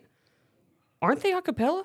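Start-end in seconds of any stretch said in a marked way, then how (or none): 1.0-1.8 very high-pitched, surprised tone. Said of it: "I turned to Haley and I went".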